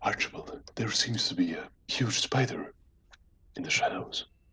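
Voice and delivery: stealthy, hushed, breathy whisper. A player's character creeps up behind a friend and speaks, whispering. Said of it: "I'm gonna whisper".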